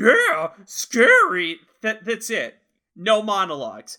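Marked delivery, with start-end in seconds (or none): 0.0-1.6 loud, belted, high, swooping dog voice. Answering a line from Shaggy: Scooby-Doo voice. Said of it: "Scooby's voice works the best".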